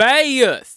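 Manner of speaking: very high, very loud, shrill holler. Imitating a grandma calling from another room: yelling the name Bayeth. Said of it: "will just just yell for her".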